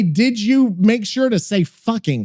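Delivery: ordinary talk, nothing marked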